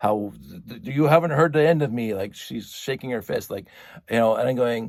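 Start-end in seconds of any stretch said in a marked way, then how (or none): 0.7-2.1 loud, high-pitched, raging scream with stumbling start. Retelling how a woman screamed threats at the neighbors: imitating someone screaming. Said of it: "she is screaming at the top of her lungs".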